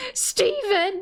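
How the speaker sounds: very high, acted-out scream, shrill yell. After naming the Gems, imitating Pearl yelling 'Steven!'. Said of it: "just yells Steven. It's such a mom".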